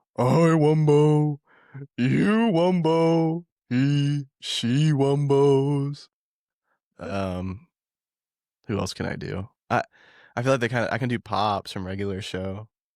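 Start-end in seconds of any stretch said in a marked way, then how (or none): 0.2-6.1 very slow, high cartoon voice, every word drawn out. Showing the cartoon voices they can do, when asked, in Patrick Star voice. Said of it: "do Patrick's voice".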